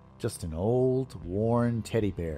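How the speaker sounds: ordinary delivery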